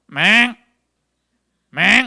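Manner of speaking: loud, narrow-mouthed toad call croak.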